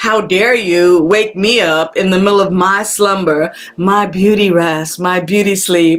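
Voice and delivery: ordinary talk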